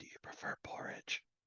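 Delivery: secretive, hushed, breathy whisper, close up. A game master voices Edward going over to someone at a meal and asking a question, whispering. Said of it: "he goes over and whispers".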